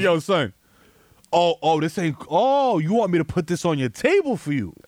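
attitude-laden, sassy server voice. Retelling how the armed restaurant employees talked: imitating waiters' attitude. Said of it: "I can tell by the attitudes. They were like".

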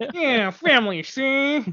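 put-on very high, old-time 1920s Chicago gangster voice. Trying a 1920s Chicago gangster voice on the word family: 1920 Chicago gangster voice. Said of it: "your nineteen twenty Chicago gangster".

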